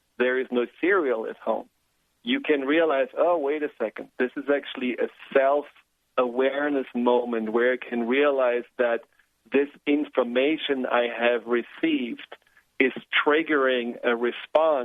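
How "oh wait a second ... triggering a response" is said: ordinary talk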